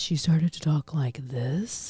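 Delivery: voice pushed down, grave. Describing a woman who lowered her voice to be taken seriously: imitating a lowered voice. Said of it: "she lowered her voice for everything".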